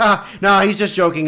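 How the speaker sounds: put-on, lightly laughed-out, brushed-off delivery. Retelling a woman's reply to Bill Hader's remark, imitating her laughing. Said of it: "she's sort of like laughing".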